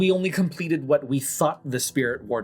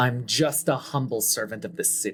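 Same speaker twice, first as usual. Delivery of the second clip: venomous, dripping with venom; 3 semitones lower, 3 dB quieter than usual. A character answers someone asking who he is, venomous. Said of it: "he like tries to say this with as much venom in his voice as possible".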